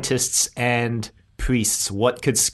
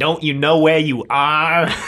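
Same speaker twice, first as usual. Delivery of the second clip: loud, very bad fake American accent; 4 semitones higher, 5 dB louder than usual. Retelling an actress's line from a Pentagon scene, in the worst American accent. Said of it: "the worst American accent".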